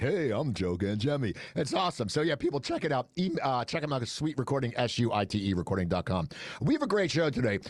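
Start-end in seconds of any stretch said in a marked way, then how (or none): 0.0-1.3 slow, deliberate announcer-style radio voice. Teasing the previous speaker after his sponsor read: put-on radio announcer voice. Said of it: "He's getting that radio voice now".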